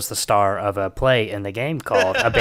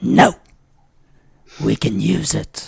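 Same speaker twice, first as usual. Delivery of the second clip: demon voice, louder; 5 dB louder than usual. Voicing a demon speaking in a character's head: demon's voice. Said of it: "It is the voice of your demon".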